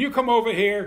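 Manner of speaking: very high, very loud, shrill, harsh, demanding voice. Mimicking the tone people use to call a wife over: mock-harsh demanding call. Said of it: "the tone of voice that you hear people using ... That's abusive".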